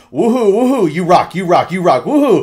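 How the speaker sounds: acted-out very loud, high, mocking taunting whoops. Retelling taunting a dying opponent in a game: imitating own toxic taunting. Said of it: "I like to get toxic".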